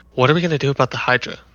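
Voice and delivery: quiet, hushed half-whisper, like a stage whisper. Speaking in character to a companion during a game: half-whispering in character. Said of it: "I kinda whisper to her and I say".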